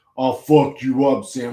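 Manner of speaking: put-on gigantic deep bass voice, laid on. Mocking a big guy's threat to Sam: mock gigantic deep voice. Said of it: "his stupid ass, gigantic, deep voice".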